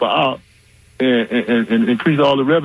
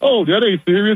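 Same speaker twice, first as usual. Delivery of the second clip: high, mock amused, laughing, dismissive brush-off; 8 semitones higher than usual. Retelling the press secretary dismissing it: imitating someone laughing it off. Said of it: "she was just laughing like".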